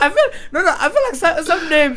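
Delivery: high-pitched voice, laughing through the words.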